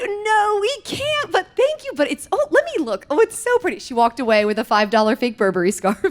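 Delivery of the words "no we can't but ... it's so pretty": very high, polite, giggling delivery. Retelling mom giggling as she gives in to a scarf: imitating mom giggling while refusing. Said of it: "she's giggling".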